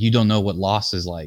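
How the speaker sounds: ordinary delivery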